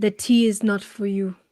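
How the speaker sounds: garbled character speech. A player in a tabletop game speaks in character, in garbled Common. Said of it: "In a very garbled common".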